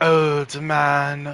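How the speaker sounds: put-on slight French accent. Calling someone old man, in a vaguely french accent. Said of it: "vaguely French".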